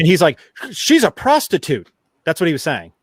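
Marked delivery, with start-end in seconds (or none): 0.7-1.9 frantic, raised, pitched-up defensive yell. Retelling a remote interview by a lawyer: imitating Dershowitz yelling. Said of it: "yelling all these".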